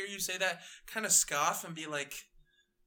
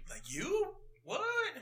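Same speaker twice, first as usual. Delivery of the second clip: startled, very high-pitched, shocked disbelief outburst; 11 semitones higher than usual. Voicing a man startled by the newcomer: shocked. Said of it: "got shocked and was like".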